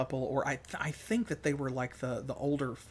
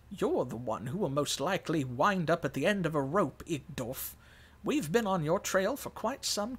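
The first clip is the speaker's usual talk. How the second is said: put-on elderly woman's voice, reading style; 2 semitones higher than usual. Narrator reading a woman's reply to a man threatening hanging, old lady voice. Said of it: "I'm giving her like an old lady voice".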